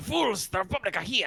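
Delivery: very high, vague, unplaced put-on European accent. A game master voices a character who turns around: vague European accent. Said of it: "I don't know what my accent is".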